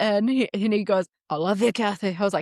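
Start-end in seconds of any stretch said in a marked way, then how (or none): 1.3-2.2 put-on poor Scottish accent. Retelling her husband's try after she coached him, the speaker does a bad scottish accent. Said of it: "You just gotta talk with the back of your throat".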